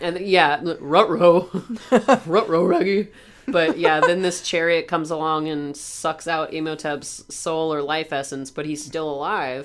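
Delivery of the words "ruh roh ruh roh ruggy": cartoon dog voice, r-heavy, sounding like ruh-roh. Joking about a movie moment with friends: Scooby-Doo voice. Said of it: "It is a Scooby".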